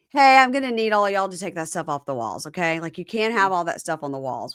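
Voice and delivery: plain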